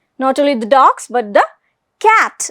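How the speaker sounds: stress on the word cat.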